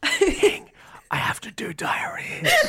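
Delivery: drawn-out, very slow whisper. Recalling a tv shoot, the speaker quotes what the listener whispered to them, retelling a whisper. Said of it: "you like leant over and whispered to me like".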